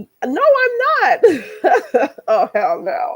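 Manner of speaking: slow, high-pitched laughing voice.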